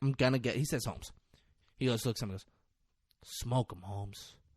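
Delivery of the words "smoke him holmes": dead calm, quiet, soft and completely calm. Retelling a movie scene, quoting Tuco giving the order: imitating Tuco, calm. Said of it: "Tuco is super calm".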